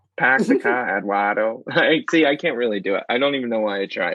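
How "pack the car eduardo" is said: botched, bad put-on Boston accent. Trying out a Boston accent on a made-up character, bad Boston accent. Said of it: "I'm so bad at accents".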